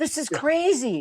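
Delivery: stunned, high-pitched, incredulous disbelief. Retelling a friend's question about the dirt road: imitating someone's disbelief. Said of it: "he couldn't believe it".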